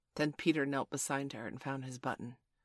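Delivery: plain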